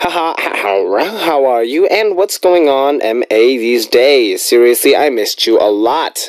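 normal talking voice

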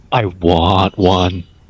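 quiet, hushed whisper. A character leans over to a companion and asks in a very hushed whisper. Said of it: "in a very hushed whisper".

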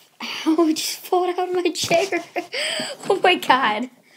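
high, loud laughing in pain.

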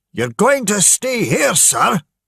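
very high, furious, angry yell. As people crowd toward a boat, a man shouts angrily at one of them. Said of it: "shouted William angrily".

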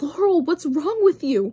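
frightened outburst. After the car whizzes by, May asks Laurel on the sidewalk, scared. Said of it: "She sounded really scared".

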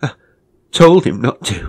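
very loud, strangled, choked, suffocating cry. Narrator reading a man's words as others stand over the dead body, suffocating voice. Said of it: "he said in a suffocating voice".

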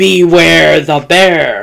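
big, growly, booming bear voice. Reading a children's story, voicing the bear with a great growly booming voice. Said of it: "a great growly voice boomed out".

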